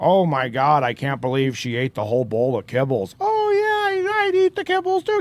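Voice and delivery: swooping rough cat voice. Showing how to do a rough temp track voice while editing: rough temp cat voice-over. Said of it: "kinda do the voice while you're editing".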